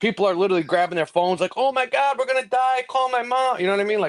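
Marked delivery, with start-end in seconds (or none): 1.6-3.6 put-on frantic panic, pitched up and drawn out. Retelling passengers grabbing phones after losing an engine: imitating panicked passengers. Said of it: "people are going fucking nuts".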